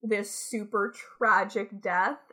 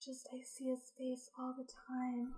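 barely audible, hushed, put-on sad voice; 4 semitones higher, 15 dB quieter than usual. Teasing someone on the podcast by mocking their fake sad voice. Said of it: "with your fake sad voice".

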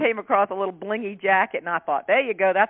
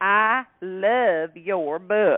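very slow, sugary, sweet country drawl. Quoting a woman who recognized the speaker, in a sweet country woman accent. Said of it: "This real sweet accent, country woman".

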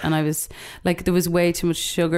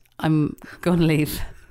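ordinary talk, nothing marked

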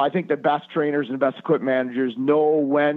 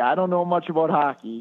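put-on grunting, gruff gravelly voice; 3 semitones higher than usual. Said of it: "kinda grunted and, you know, gravelly voice at you".

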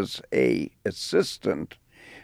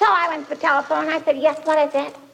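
weird put-on little-girl voice. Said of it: "she would do this weird little girl's voice".

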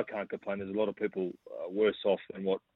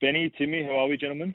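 eager, upbeat, enthusiastic, high-pitched delivery; 7 semitones higher, 4 dB louder than usual. Greeting the hosts on joining the show: enthusiastic greeting.

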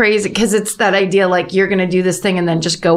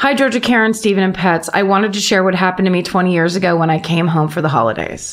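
ordinary talk

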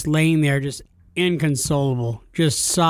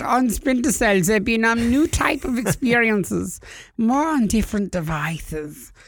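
put-on German accent, much higher pitch; 6 semitones higher than usual. Taking turns at impressions with another speaker, German-accent Yves Guillemot impression. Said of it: "[name]'s was just German".

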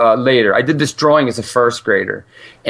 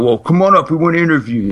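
put-on gruff, higher-pitched New York accent; 5 semitones higher than usual. Retelling a phone call about a sent resume: gruff New Yorker voice. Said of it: "this really gruff New Yorker".

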